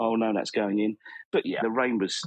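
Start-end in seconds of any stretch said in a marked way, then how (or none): none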